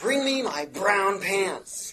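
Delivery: loud high shout. Telling a joke where he faces a gigantic enemy fleet: shouting out an order. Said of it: "he shouts out".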